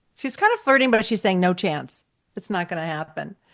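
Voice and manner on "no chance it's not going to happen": normal talking voice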